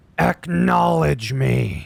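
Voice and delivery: raspy, grunting, rough voice. Comparing how Roman Reigns says acknowledge me: raspy Roman Reigns impression. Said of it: "There was like more of a grunt, a raspiness to his voice".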